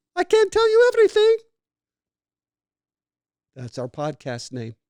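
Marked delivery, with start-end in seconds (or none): 0.2-1.4 loud, high, put-on Hungarian lady accent. Retelling what his mom answered when asked for more secrets: imitating his mom's Hungarian accent. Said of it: "saying it like a Hungarian lady".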